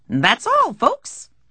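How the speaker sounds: high-pitched cartoon character voice. Describing a weak speech ending the speaker pictures, high-pitched Looney Tunes sign-off voice. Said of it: "saying in a high-pitched voice".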